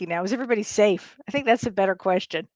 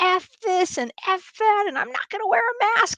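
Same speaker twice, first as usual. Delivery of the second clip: put-on very high, childish, toddler-like screaming; 11 semitones higher than usual. Retelling a man ripping off his mask by an elevator, imitating toddler-like screaming. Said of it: "screaming like a friggin' toddler".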